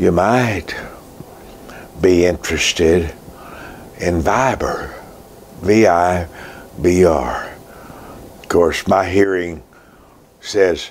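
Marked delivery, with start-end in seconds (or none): 0.0-7.5 very soft, slow murmur with no excitement. Retelling a preacher friend's app tip: imitating a very soft voice. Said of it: "Very softly, he says".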